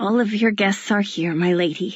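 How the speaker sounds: wheezy, breathy, wheezing voice. An old man bowing in to address the Duchess, in a wheezy voice. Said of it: "he says in a wheezy voice".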